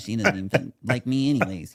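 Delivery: put-on pouty, grumpy, sulking little-boy voice. Retelling a moment when the little boy in him came out: imitating his inner little boy. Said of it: "the little boy in me is coming out and he's like".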